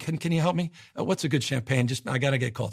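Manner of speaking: nervous-sounding man's voice. Retelling a customer rushing into the store: imitating a nervous man. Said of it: "a very nervous guy".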